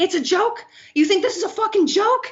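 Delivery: very high, shrill, enraged, furious screaming. Retelling how a man screamed at a woman who called it a joke, retelling a scream. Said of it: "And he's like screaming at her".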